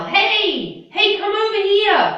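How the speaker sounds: shrill, high shout at full volume. Explaining the word yell, the speaker demonstrates shouting at somebody. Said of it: "to shout at somebody, to yell".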